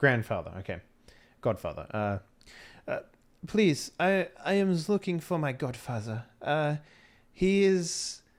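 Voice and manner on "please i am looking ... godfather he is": tearful character voice, much higher. In the told scene, Olga begs a police officer, with a tearful plea. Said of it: "Little tear comes down the face".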